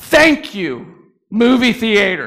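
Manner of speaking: put-on little girl full-lung swooping scream. Speaker recounts a little girl on a theater railing shouting her thanks: retelling a little girl's scream. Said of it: "screamed at the top of her lungs".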